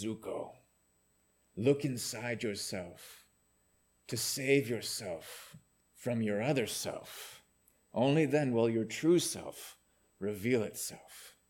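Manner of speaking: put-on slow, wise old man voice. Recapping a scene where zuko advises himself in his uncle's voice; wise uncle voice. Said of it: "he's using his uncle's voice".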